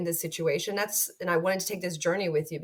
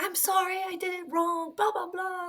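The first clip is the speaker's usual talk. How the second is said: acted-out, high, tearful, sobbing scream-cry; 12 semitones higher than usual. Retelling a grounded thirteen-year-old's apology, imitating someone screaming and crying. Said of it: "She was like screaming, crying".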